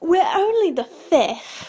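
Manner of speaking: slow, high, patronizing, condescending drawl. Retelling what a man said after a little pause: mock-condescending. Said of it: "in the most condescending voice he said, he went".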